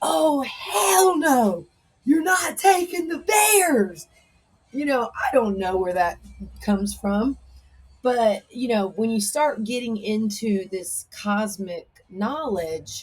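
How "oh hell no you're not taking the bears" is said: very high, drawn-out outraged yelling. Recounting a vision where bears were erased, retelling a yell. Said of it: "just yelling like".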